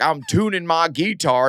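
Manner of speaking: bad, slow, failed attempt at a Southern accent. Retelling the guy who got the role, imitating his bad Southern accent. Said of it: "I just couldn't get the southern accent down".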